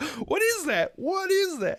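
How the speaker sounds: baffled, very high, slow bewilderment. Retelling a kid's first sight of something supernatural: imitating a bewildered reaction. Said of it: "he really sells it in that moment".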